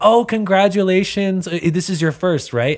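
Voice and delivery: put-on thrilled, very high voice. Retelling what a bride's mother said about the baby: imitating an excited mother. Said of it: "she was so excited".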